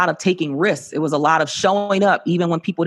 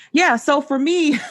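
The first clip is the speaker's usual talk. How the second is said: laughing while talking, much higher pitch; 10 semitones higher than usual. Starting to answer a question in a conversation, laughing while talking. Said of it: "I'm laughing because I always say this".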